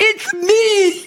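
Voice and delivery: mock very high scream with "me" drawn out. Retelling how she screamed at a man from her hospital room: imitating her own scream. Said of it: "But I was screaming".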